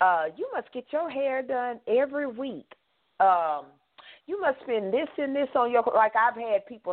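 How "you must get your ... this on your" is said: put-on sugary, backhanded, snide tone, pitched up. Imitating people who remark on her hair: nice nasty tone. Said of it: "say that in a nice, nasty way".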